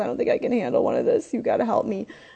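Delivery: high, rushed, tearful, pleading bawling. Retelling what a man kept saying to Kim, imitating someone bawling. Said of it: "and he's bawling".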